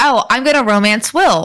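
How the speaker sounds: plain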